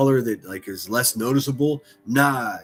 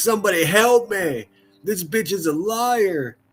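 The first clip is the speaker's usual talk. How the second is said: high, slow pleading voice, liar stretched long; 7 semitones higher than usual. Giving the crooked glasses a voice, pleading for help: voicing the glasses. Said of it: "They're like".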